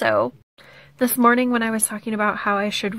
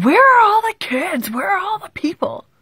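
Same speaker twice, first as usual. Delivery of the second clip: mock fed-up, angry hollering with raised pitch; 9 semitones higher, 4 dB louder than usual. Retelling how a neighbor yelled in his front yard: imitating neighbor yelling. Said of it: "he was out in his front yard yelling".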